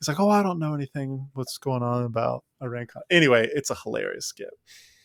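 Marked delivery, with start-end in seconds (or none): 0.2-3.0 feigned innocence, sweetly clueless, super-nice. Retelling a comedy skit's press scene: imitating Ronald Reagan acting innocently nice. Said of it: "he goes back to being the super nice guy".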